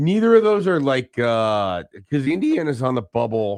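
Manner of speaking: slow, cracking voice breaking mid-sentence. Host previewing tonight's college basketball games on air, voice cracking. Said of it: "there's a voice crack right there".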